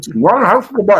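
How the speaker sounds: shrill, loud, talking through a mouthful. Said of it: "while you had your mouth full right now".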